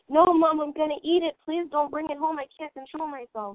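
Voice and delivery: frantic, desperate, high, panicked pleading scream. Recalling pleading with mom over the shopping cart, the speaker retells screaming. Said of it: "I'd start screaming".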